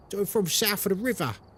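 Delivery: natural South London accent. Explaining London accents, showing how South Londoners talk: South London accent. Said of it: "I talk a bit like this".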